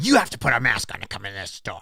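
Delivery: acted, snarled, hostile voice. Retelling how the store manager greeted them at the door, imitating someone snarling. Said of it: "the lady's snarling at me".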